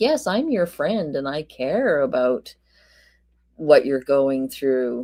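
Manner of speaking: play-acted weary, long-suffering, put-upon dutiful caring. Imagining him answering a call from Sarah, imitating a long-suffering tone. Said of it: "he has to put on his, like, ugh, long-suffering".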